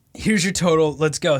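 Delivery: plain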